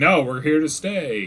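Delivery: put-on shouting. Summing up another player's in-character reply, retelling a yell. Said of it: "You're just yelling like".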